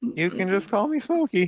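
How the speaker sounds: very high, swooping character voice, pushed way up. Greeting the players as a character in a game: Morty voice. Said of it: "This is my voice for Jupiter".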